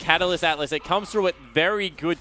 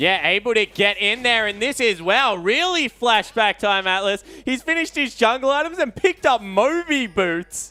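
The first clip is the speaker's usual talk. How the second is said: thrilled, excited, pitched-up play-by-play commentary; 5 semitones higher, 3 dB louder than usual. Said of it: "you sound so excited".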